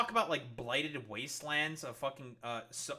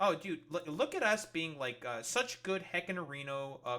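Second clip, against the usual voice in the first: normal talking voice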